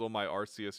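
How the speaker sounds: plain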